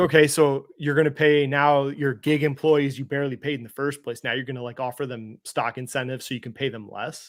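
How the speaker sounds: ordinary talk, nothing marked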